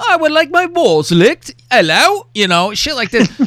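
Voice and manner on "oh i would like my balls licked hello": put-on classy posh English accent, pitched up. Joking about how a creep sounds funny with an English voice, creepy English voice. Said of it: "a creepo with an English voice".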